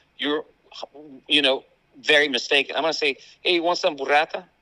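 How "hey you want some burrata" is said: fast, casual delivery, higher. Acting out asking a daughter about the cheese: saying it quickly, casually. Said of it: "I'll go very, way quickly".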